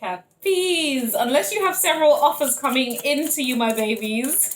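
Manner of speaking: loud talk, words broken up by laughter. Reading cards for Capricorns, laughing while talking. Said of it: "let me stop laughing and be serious".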